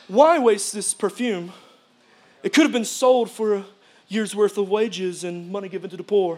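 put-on snooty, indignant bougie voice. Reading a bible passage aloud, voicing those present, in a put-on bougie voice. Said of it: "That's my bougie voice".

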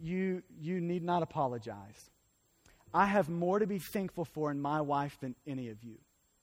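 put-on tearful voice, words pushed out while crying. Retelling a pastor's reply to an apology, imitating someone speaking through tears. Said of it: "And through tears, this guy looks back and says".

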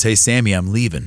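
ordinary delivery

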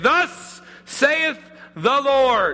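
big, booming prophet voice, high and slow. Showing how prophets walk into a room and proclaim, big booming voice. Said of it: "with a big booming voice and you say".

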